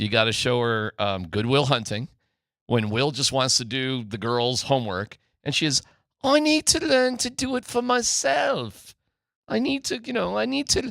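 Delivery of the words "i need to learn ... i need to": put-on English woman's accent, very high. Describing a Good Will Hunting scene, voicing the girl, English female accent. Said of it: "That's my English accent, by the way".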